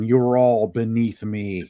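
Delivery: put-on villainous, menacing Eastern European accent. Imagining a villain threatening the heroes, do a Doctor Doom voice with Eastern European accent. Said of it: "some Eastern European accent going".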